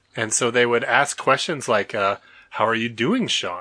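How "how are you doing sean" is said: put-on almost-Canadian accent. Imitating Washingtonians at Bible school asking a question, almost-Canadian accent. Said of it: "almost a Canadian accent".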